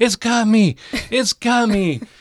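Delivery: screaming in panic, very high, loud, shrill, drawn-out. Retelling a graveyard walk where Ron falls to the ground: imitating Ron screaming. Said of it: "starts screaming".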